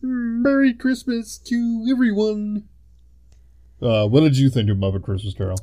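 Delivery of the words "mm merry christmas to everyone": very high-pitched, dragged-out voice. Mocking a film scene: Kermit the Frog voice. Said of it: "Kermit is standing there and be like".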